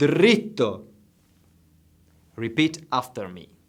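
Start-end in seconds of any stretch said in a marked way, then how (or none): 0.0-0.8 deliberate, slow, loud, drawn-out "dritto". Teaching a learner a word for directions so they can repeat it, said slowly. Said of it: "I'll say it slowly now".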